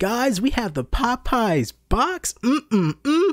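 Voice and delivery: very high, very slow, drawn-out overexcited gush. Imitating a guy in his car reviewing a tiny Popeyes meal: imitating an overexcited food reviewer. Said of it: "losing your shit over".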